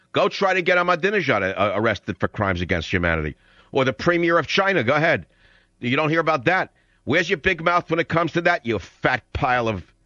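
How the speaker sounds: furious, raging delivery with words spat out.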